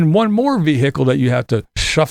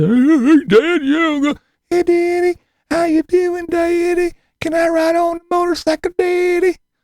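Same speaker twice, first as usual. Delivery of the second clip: very high-pitched talking-cat pet voice. Retelling how the cameraman voiced the pets: imitating cameraman Kevin's pet voice. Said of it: "like cameraman Kevin did".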